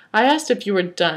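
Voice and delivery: ordinary talk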